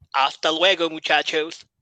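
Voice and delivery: put-on Spanish spoken with an Irish accent. Recounting Finn Balor and Styles telling the Lotharios to beat it, as Finn Balor speaking Spanish, Irish accent. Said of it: "Finn Balor speaks Spanish in an Irish accent".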